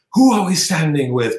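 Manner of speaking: poor, high-pitched half-shout. Retelling a senator shouting at a hearing on apartheid: bad Joe Biden impression, shouting.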